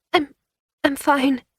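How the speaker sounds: very high-pitched, stammering voice. Reading a story aloud, a crying character insists she's fine: stammering. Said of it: "Maria stammered".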